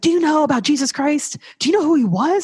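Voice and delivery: put-on excited, eager voice. Retelling how her husband would ask her about jesus, imitating excited asking. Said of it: "so excited".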